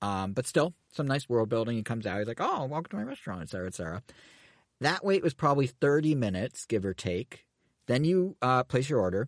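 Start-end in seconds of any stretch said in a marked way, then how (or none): 2.4-3.4 pitched-up, very adorable-sounding voice. Retelling Chef Toad greeting guests at the cafe: adorable Toad voice. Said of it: "in that adorable, although not quite as scruffy as I expected, Toad voice".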